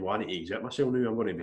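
normal talking voice

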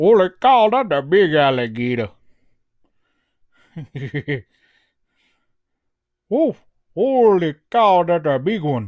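put-on slow, drawn-out Louisiana accent. Doing an impression of Troy Landry from Swamp People: Troy Landry impression. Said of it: "I'm gonna do my best Troy Landry impersonation here".

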